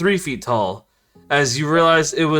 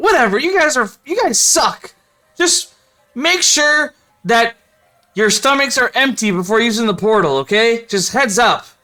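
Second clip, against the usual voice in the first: high, squeaky shouted voice; 6 semitones higher, 3 dB louder than usual. Voicing Dicklin yelling at the players, in a squeaky yelling voice. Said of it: "Dicklin yells in squeaky voice".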